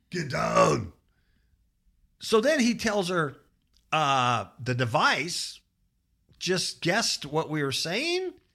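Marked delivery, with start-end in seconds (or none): 0.2-1.0 voice like the killer cyborg in the movie. Joking about Skynet coming alive: Arnold Schwarzenegger impression. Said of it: "that was a good impression".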